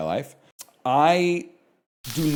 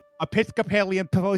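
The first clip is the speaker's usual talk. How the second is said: cartoon duck voice, pitched much higher; 8 semitones higher than usual. Taking a turn at saying a tricky phrase, in a Daffy Duck voice. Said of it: "You sound like Daffy Duck".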